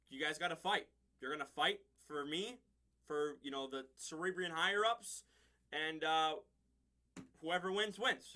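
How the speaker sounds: usual speaking voice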